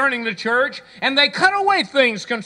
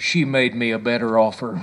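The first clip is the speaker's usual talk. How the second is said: whispered, much lower; 12 semitones lower than usual. Telling a story, the speaker quotes the preacher whispering to the groom: retelling a whisper.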